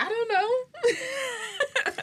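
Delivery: laughing through the words, high-pitched and slow.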